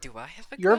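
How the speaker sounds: quiet whisper. Voicing a character asking quietly about his god: whisper. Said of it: "You just hear David whisper quietly".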